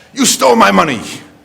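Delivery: high, shrill, loud accusing voice. Speaker retells a woman coming to the front of the line, imitating her loud voice. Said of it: "in this loud voice".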